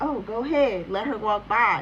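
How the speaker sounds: ordinary delivery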